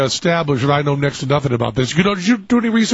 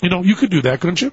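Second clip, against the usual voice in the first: plain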